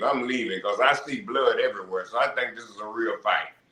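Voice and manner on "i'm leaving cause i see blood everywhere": ordinary delivery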